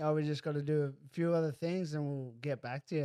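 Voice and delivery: ordinary delivery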